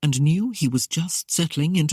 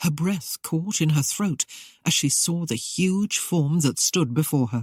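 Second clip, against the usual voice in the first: plain reading voice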